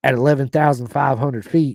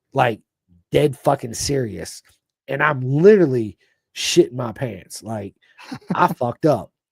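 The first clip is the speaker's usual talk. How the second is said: normal talking voice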